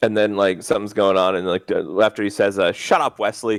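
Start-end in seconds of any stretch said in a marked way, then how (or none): none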